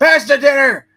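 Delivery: very loud, very high, shrill shouted yell. Joking about the Jamesons at Thanksgiving dinner: imitating Jameson yelling. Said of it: "just yell at back and forth".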